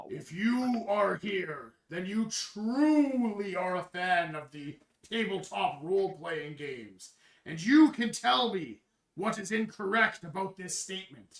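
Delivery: big booming, thundering voice. Narrator voicing the voice Rastin hears on the path, booming voice. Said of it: "you hear this booming voice".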